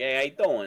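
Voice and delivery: full, put-on Brooklyn accent. Joking about AI voices, trying out a full Brooklyn accent. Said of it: "We need a full like Brooklyn A I voice".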